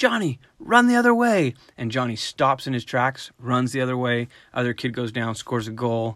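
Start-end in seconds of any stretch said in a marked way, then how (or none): 0.0-1.5 very high, shrill, loud sideline-style yell. Telling a game story, acting out the coach calling to a player, retelling a coach's yell. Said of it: "Coach yells".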